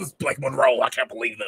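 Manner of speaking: indignant, fuming, angry, outraged tone. Describing how fans reacted: impression of angry fans. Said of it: "that's my impression of like angry, angry".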